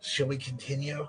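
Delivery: eerie, hushed, creepy half-whisper. Narrator voices a skeleton lord who leans in to the player: creepy half-whisper. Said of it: "he whispers to you creepily".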